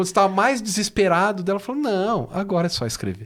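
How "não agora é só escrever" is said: mock derisive, dismissive, scornful, mocking tone. Retelling what Luciana Marta Silveira said when you got desperate, imitating Luciana Silveira's mockery. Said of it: "ela falava isso num tom de deboche".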